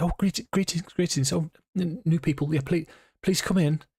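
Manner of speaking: put-on hurried young boy voice, high and fast. A storyteller voices a boy of about ten hurrying over to greet new people: hasty boy voice. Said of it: "scuttles over to you at some haste".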